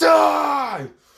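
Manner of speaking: very high, long, drawn-out battle cry scream. Retelling Luffy's final attack on Blackbear: imitating Luffy screaming. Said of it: "Luffy just screams".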